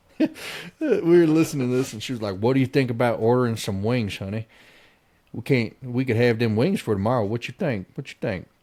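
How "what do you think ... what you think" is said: put-on deep, laid-on Southern accent. Retelling what an overheard woman said: deep southern accent. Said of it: "deep Southern accents".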